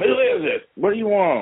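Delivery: shrill, very high shouting. Retelling answering a banging on the apartment door: imitating own past yelling. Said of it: "I started yelling".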